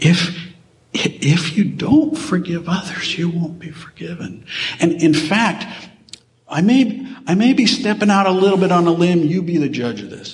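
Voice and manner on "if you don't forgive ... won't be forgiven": tender, slow, close-to-tears voice. Quoting a teaching to listeners, acting out a tearful plea. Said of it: "he says it with a tear starting to well up in his eye".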